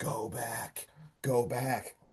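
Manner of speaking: very slow, hushed whisper. Retelling a scene where a character whispers: imitating a whisper. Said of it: "you kinda hear her whisper".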